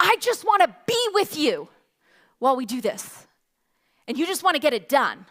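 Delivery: put-on hurt, annoyed, upset, complaining child's voice. Retelling what an annoyed fourth-grader told you, imitating an upset child. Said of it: "she was so annoyed with me and so upset".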